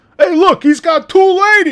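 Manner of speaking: put-on very shrill, very loud, high old-man yell. Retelling an old man's remark at a nursing home show: imitating an old man yelling. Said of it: "hearing an old man yell".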